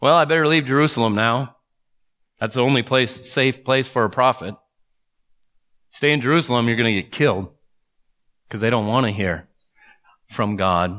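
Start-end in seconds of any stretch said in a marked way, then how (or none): 0.0-7.5 ironic, sarcastic retort tone. Paraphrasing the prophet's words about leaving jerusalem: imitating a sarcastic tone. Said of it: "You hear the sarcasm?".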